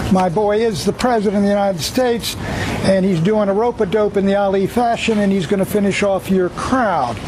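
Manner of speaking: normal talking voice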